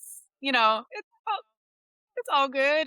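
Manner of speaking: mock relaxed, laid-back, mellow easy tone. Retelling own calm moments before a first match: imitating own chill mellow tone. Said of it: "really chill, mellow".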